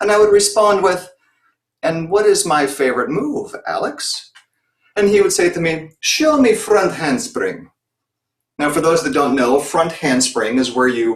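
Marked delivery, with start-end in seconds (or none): 6.0-7.7 put-on terrible, clumsy, high, swooping, sing-song Russian accent. Recalling eight o'clock morning sessions, imitating Alex in a terrible Russian accent. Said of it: "please forgive the terrible Russian accent".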